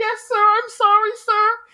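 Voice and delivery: put-on pleading apologetic tone. Retelling how Mishima answers Kamoshida: imitating someone groveling. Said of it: "just totally groveling".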